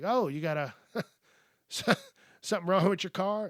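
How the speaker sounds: amused, laughing, mocking tone with swooping pitch. Retelling a traffic stop, quoting the officer: imitating an officer laughing. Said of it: "the officer was kinda laughing at me".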